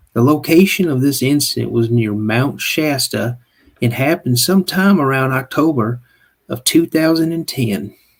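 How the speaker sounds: put-on Southern American accent. Reading a teaser of a story on request: put-on southern accent. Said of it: "give him the Southern accent real quick".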